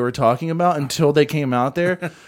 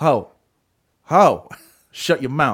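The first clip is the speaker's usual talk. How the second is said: offhand, dismissive, drawled, brash talk. Recounting a man who came in talking on his phone, imitating a loud man on the phone. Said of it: "And he was really loud".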